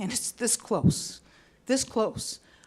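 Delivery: moved, earnest, heartfelt, emotional, insistent tone. Speaker talking about a great boss and years of work, getting emotional. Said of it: "I'm getting emotional".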